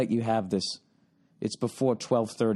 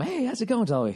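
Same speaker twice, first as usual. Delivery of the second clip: acted, bright, high-energy, cheery, very high voice; 12 semitones higher than usual. Speaker retelling how they greeted dolly before ordering turkey, mock-upbeat greeting. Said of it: "so I go from".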